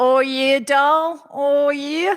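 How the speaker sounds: very slow, sweet drawl. Describing an older ex-boyfriend, imitating how he would speak. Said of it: "He would speak like this".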